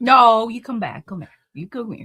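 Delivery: very loud, booming calling voice. Calling back a fellow speaker who jokes about going to sit in the corner, mom voice. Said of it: "use your mom voice".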